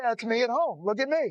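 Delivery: normal talking voice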